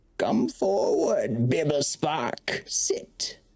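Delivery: put-on old hag character voice. Game master as old Mona in her rocking chair, bidding Bibblespark enter, old hag voice. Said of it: "In this episode the party strikes a deal with Old [name] - the Glazvolk Hag. / She bids you enter. / you see old Mona sitting in a rocking chair. / It is your memory. I want your sorrowful memory".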